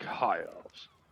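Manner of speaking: mumbled aside, barely voiced, under the breath. Playing his character who chooses to ignore another, muttered under his breath. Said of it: "under my breath".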